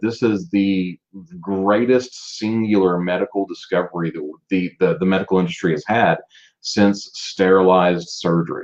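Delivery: ordinary delivery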